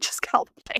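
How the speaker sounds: soft, hushed whisper.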